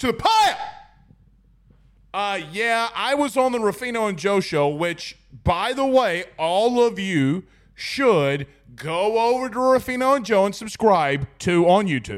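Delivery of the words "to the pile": very high-pitched put-on voice. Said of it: "in my best Kurt Taylor voice".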